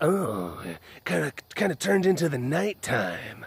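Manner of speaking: creepy guy voice. Recalling being comical and voicing Flash, Flash as a creepy guy. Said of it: "like a creepy kind of like guy".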